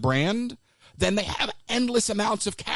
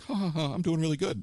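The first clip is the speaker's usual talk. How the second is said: put-on chuckle to himself, lower and quieter; 3 semitones lower, 4 dB quieter than usual. Acting out a man's reaction in an argument about a Star Wars character, imitating someone chuckling to himself. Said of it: "the chuckle to himself".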